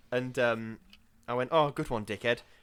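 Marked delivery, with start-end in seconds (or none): 1.5-2.4 put-on muttering under breath. Retelling a remark to a man blocking the aisle: imitating muttering under breath. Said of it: "just under my breath".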